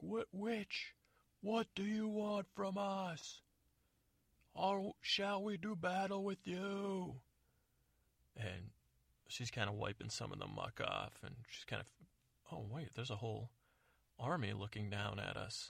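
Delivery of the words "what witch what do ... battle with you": acted-out holler, high and slow. Retelling a scene where a man above answers a witch below, yelling down. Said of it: "he's yelling down".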